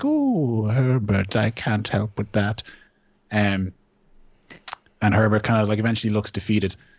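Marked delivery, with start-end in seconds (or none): 0.0-2.6 trembling creature voice, very slow and drawn out. Describing a creature replying to Herbert, imitating a shaky creature voice. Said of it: "you hear the the shaky voice".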